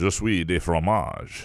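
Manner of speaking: put-on mock French accent. Asked for a French impression, replying in a put-on French accent. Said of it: "can we get a French Rube impression".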